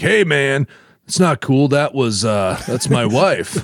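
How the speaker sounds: laid-back dude voice. Retelling Zeus scolding his guest: The Dude voice. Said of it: "He sounded like the dude".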